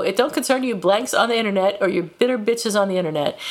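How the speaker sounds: ordinary delivery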